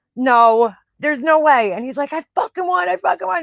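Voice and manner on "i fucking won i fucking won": put-on jubilant scream, high and excited. Retelling how he screamed in the car after winning, retelling excited screaming. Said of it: "he's like screaming in the car".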